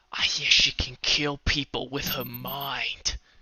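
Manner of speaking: secretive, nervous close whisper with "mind" drawn out. Storyteller voicing a man who leans in close to your ear, whispering. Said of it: "he kind of whispers whispers into your ear".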